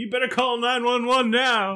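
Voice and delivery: play-acted very high-pitched hollering yell. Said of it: "things that he yells out".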